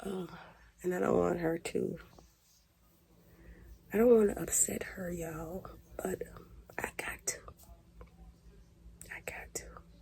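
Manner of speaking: very soft, very quiet, hushed whisper. Talking to viewers while the speaker's mama is next door, whispering. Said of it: "why am I whispering?".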